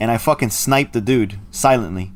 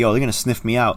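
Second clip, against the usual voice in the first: ordinary talk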